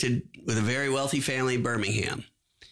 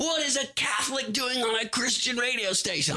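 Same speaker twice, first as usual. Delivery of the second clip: acted-out shrill, very high screaming rant; 11 semitones higher than usual. Retelling a hostile radio caller's words: imitating a caller screaming. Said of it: "He's screaming over the".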